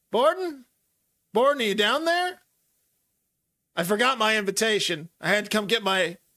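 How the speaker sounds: high-pitched shouting. Voicing a character calling down the stairs: yelling from upstairs. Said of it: "You hear someone yell".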